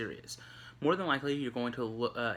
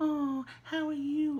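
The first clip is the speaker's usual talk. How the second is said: put-on very high, slow, drawn-out friendly baby talk. Showing how we talk to babies and animals: raised high pitch. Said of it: "The pitch of our voice goes up".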